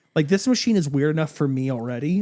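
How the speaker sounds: normal talking voice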